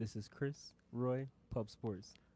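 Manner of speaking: dropped voice. Host signing off the show with names and show title, in a dropped voice. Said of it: "Why'd you drop your voice like that".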